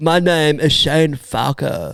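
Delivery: put-on arrogant surfer-boy voice. Arguing about how Keanu talks, a friend imitates him as an arrogant surfer boy. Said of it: "you sound like a surfer boy from Cali who's very arrogant".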